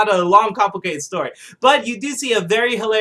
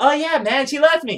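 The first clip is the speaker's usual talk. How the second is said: put-on cheerful voice, higher pitch; 5 semitones higher than usual. Retelling a scene where Michael Peña answers a question about his girl, cheerfully. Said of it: "So he's always cheerful".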